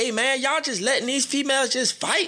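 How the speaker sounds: very high-pitched hollered yell. Retelling yelling at the dudes while pulling two fighting women apart: retelling a yell. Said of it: "I'm yelling at the dudes like".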